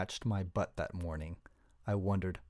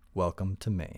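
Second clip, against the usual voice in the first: dry, deadpan, lower pitch; 3 semitones lower than usual. Stumbling out of his sleeping bag, the narrator remarks to his companion, dry. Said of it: "I dryly said".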